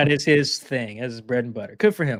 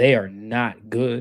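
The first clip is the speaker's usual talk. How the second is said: very slow, deliberate, each word spaced apart; 2 semitones lower than usual. Making a point to the other speaker in a discussion: very slow. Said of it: "I'm say this real slow".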